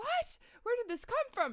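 very high, loud startled cry.

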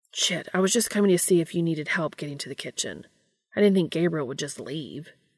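plain reading voice

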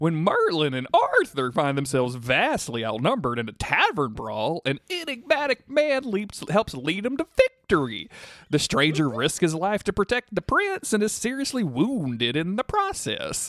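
high cartoon voice with big swooping pitch swings. Reading an episode description in the requested voice: halfway between Goofy and Mickey Mouse. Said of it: "a halfway between Goofy and Mickey Mouse".

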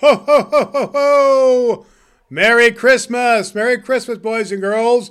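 belted loudly, each "ho" stretched out. Greeting boys and girls after being introduced: Santa Claus voice. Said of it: "the big man himself, Santa Claus!".

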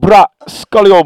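put-on Jamaican accent. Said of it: "he talked in that Jamaican accent".

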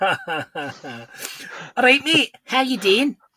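put-on Scottish accent. Podcast hosts introduce themselves and greet each other in a mock Scottish accent. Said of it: "Are we going to talk Scottish".

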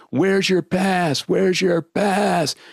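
high, screamed, insistent, repeated yelling. Retelling a man confronting the speaker near a stage, imitating someone screaming. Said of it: "And he's screaming at me".

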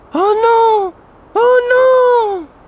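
high, loud, reedy troll wail, not stretched out. Narrator reading a story, the troll cries out in a thin reedy troll voice. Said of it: "le troll s'écrie de sa voix fluette".

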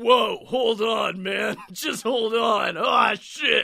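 fake, put-on manly voice. Narrating a story, he breaks in to show off: new man voice. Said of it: "This is my new man voice".

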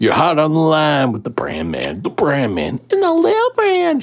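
put-on Southern accent. Taking up the prompt to try a southern place, in a southern accent. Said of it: "pull like a Southern accent out".

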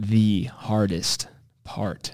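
leaning heavily on hardest, strong stress. Asking about the hardest part of opening a gym, strong stress on hardest. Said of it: "I'm emphasizing. Not the easiest, but the hardest".

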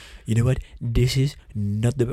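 low, blustery blowhard politician voice. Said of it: "You do a really good impression".

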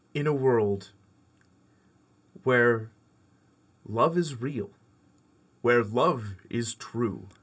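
epic movie trailer announcer voice. Asked by the others to perform a trailer: movie trailer announcer voice. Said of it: "Let's do the first ever, you know, honest movie trailer".

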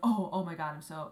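flustered, freaked-out, panicked stammering babble. Retelling her reaction after nearly hitting someone: imitating her own freaked-out panic. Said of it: "I was so freaked out".

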